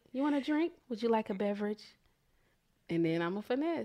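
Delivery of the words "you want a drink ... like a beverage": sweet coaxing tone, quieter. Showing how she pampers a partner before asking for money: nice sweet-talking voice. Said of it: "And I'll be nice".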